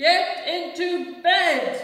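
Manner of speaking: very loud, very high, big commanding voice. George orders Bartholomew into bed, in a big voice. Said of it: "George said in a big voice".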